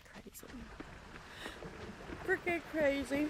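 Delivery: mumbled, hushed, breathy words through a yawn. Unable to get him after trying, speaking while yawning. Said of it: "I'm so sorry I'm yawning".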